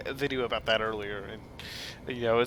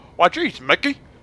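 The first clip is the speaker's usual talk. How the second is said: silly, goofy cartoon character voice, pitched high; 6 semitones higher, 10 dB louder than usual. Trying out voices to practice: Goofy voice. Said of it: "now I can't do a goofy voice".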